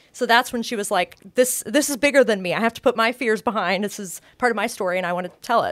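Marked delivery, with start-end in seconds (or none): none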